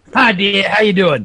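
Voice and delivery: put-on New York accent. Pretending to phone someone's mum, in [name]'s New York accent. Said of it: "I went New Yorker there".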